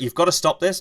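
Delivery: put-on furious, exasperated, high-pitched shout. Retelling being in pain and yelling at him: retelling irate yelling. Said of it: "going irate".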